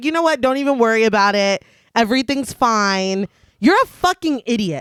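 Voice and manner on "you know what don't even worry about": usual speaking voice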